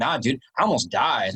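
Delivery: mock casual, nonchalant delivery. Retelling dad's reply about a hard hike: imitating a nonchalant tone. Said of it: "he just said it so nonchalantly".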